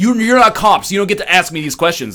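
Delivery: mock yelling. Retelling an angry man's words at immigration: imitating someone yelling. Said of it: "yelling at them".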